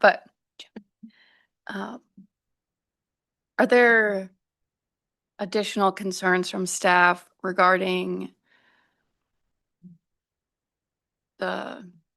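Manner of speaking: weak, strained throat voice. At a board meeting, speaker apologizes for their throat and questions staff, weak throat voice. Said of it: "I have a very weak throat voice right now".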